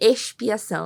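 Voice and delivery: put-on expiação pronounced with a Carioca accent. Recalling reading a word aloud, saying expiação with a Carioca accent. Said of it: "com um sotaque carioquês".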